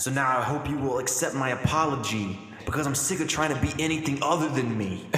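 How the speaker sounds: plain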